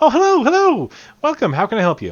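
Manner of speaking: very high, very loud, bouncing gnome voice. Voicing a smiley gnome behind a shop counter greeting customers: smiley bouncing gnome shopkeeper voice. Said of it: "The gnome's just sitting there, bouncing".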